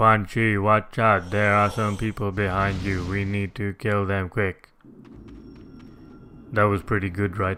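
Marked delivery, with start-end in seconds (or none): 0.0-4.7 robot-like speech. Making up a line for the character on the spot, do a robotic Megan Fox Nitara impression. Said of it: "Her robotic voice".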